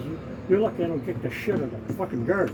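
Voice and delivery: ordinary talk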